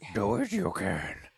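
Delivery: put-on wise old alien master voice. Retelling a pep talk from a movie scene: Yoda voice. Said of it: "Yoda gives him this freaking pep talk".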